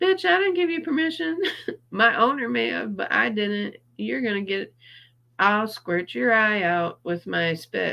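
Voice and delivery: put-on high, indignant talking-camel voice. After being allowed to play with a camel, the speaker voices the camel. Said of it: "The camel said".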